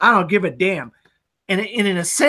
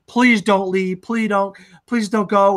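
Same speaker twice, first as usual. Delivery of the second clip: put-on tearful, pleading voice. Retelling a film scene where she begs him, crying: imitating someone begging in tears. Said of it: "She begs him. She's crying".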